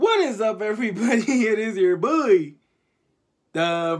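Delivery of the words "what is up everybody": cracked, breaking voice, cracking up high. Opening a video by greeting everybody, voice cracking. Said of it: "my voice cracked when I tried to do the what is up".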